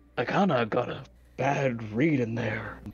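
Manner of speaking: low, hushed murmur. Out of earshot, speaking to the whole party: low hushed voice. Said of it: "says in a much more, like, low, hushed voice".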